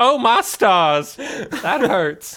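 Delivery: very high, slow put-on southern belle accent. Voicing the worm monster as it gets hurt: southern belle voice. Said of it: "Southern Belle".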